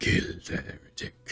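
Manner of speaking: whispered, hushed, breathy put-on demon voice. Mid-fight in a video game, the player switches to a demon voice. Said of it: "Demon voice".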